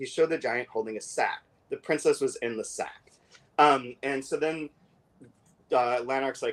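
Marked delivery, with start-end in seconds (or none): none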